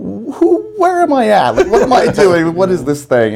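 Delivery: loud, high-pitched, bewildered, stunned disbelief, blurted out.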